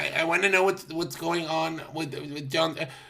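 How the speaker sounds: flustered, panicky, panicked stammer. Imitating a man panicking on a phone call: imitating someone panicking. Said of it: "you should hear him panic on the call".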